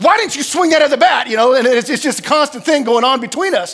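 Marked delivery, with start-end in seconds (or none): 0.0-1.3 exasperated, fed-up yell, pitched up. A father recounting morning arguments with his son about baseball, retelling a frustrated yell. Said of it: "I'm yelling at him going".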